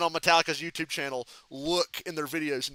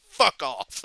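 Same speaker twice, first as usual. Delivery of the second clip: play-acted truly annoyed, dismissive, irritated tone; 2 semitones lower than usual. Retelling a band member snapping at another: imitating an irritated fuck off. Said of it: "It was the most genuine fuck off".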